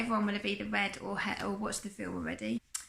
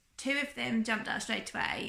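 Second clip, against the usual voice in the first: usual speaking voice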